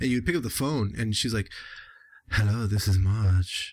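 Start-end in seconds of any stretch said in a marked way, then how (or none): 2.3-3.7 put-on low, slow, sexy French-accented voice. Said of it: "she had this really sexy voice 'cause she had the French accent".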